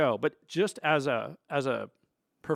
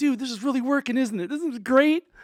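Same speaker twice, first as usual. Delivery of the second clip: put-on thrilled big-kid excitement, very high and loud; 11 semitones higher, 6 dB louder than usual. Retelling how Drew ran offstage after the first bit: imitating Drew, so excited. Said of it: "so excited, like a big kid".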